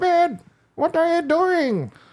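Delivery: put-on very high-pitched grandma voice, calling out loudly. Speaker announces an impression of his grandma, then does it, imitating grandma's voice. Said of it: "I'm gonna do an impression of my of my grandma right now".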